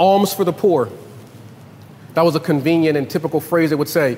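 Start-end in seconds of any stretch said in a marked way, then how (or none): none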